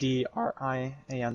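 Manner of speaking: very slow, very drawn-out, breaking voice. Spelling out his Discord name after shouting all game, voice cracking. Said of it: "Sorry, voice crack".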